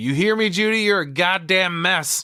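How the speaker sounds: mock piercing, shrill holler pitched way up. Retelling a movie scene where Gail yells to Judy: imitating someone yelling. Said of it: "Gail yells out to Judy".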